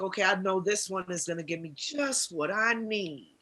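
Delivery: ordinary delivery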